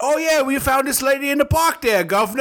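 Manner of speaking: put-on very high-pitched English bloke accent. Describing two men in a movie, imitating how they talk: British bloke accent. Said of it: "they're so British and so English".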